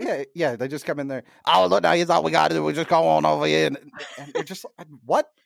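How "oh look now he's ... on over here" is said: put-on Louisiana accent. Retelling a drunk man's talk, in an imitation cajun accent. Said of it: "The accent came out".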